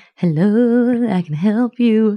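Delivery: every word stretched out slowly. Retelling a story scene, voicing the Cheshire Cat offering help: Cheshire Cat voice. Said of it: "that's a great Cheshire Cat".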